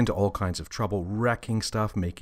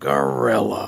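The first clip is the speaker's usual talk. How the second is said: grunted, louder; 4 dB louder than usual. Narrator reads the father answering his excited son: grunted. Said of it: "Father grunted from behind his book".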